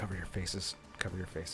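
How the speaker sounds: urgent hushed whisper, under the breath. Whispering in character to the group as they leave: whispering. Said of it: "I whisper to everyone".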